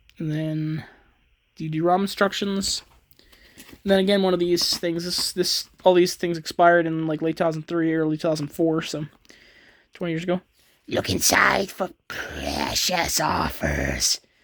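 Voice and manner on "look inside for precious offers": terrible, very deep creature voice, drawn out and swooping. Speaker reading text off a VHS box, in a terrible Gollum impression. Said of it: "that's a terrible Gollum impression".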